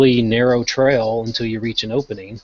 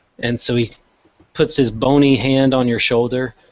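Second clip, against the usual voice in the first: ordinary delivery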